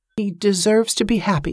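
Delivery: spoken gently and mildly. Reading a novel, a woman looks out the window and speaks softly. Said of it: "she said softly".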